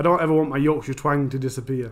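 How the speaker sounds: ordinary talk, nothing marked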